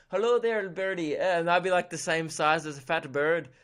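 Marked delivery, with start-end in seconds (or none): 0.1-1.1 terrible Irish accent, rattled off quickly. Speaker imagines herself as a leprechaun, bad Irish leprechaun accent. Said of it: "how shit my Irish accent would be as a leprechaun".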